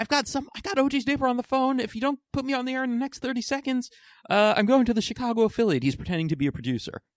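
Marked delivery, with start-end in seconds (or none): 0.0-5.8 mock scream, much higher pitched. Retelling a man screaming down the phone at the ABC network, imitating someone screaming. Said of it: "just screams something like".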